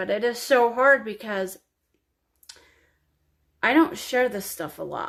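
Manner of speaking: tearful, weeping while speaking. Sharing a personal story on video and apologizing, crying. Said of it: "I'm so sorry I'm crying again".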